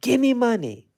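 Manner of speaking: put-on nasty tone. Retelling the older one demanding money: imitating a nasty demand. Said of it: "Really nasty, like".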